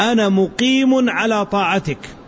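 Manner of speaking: ordinary talk, nothing marked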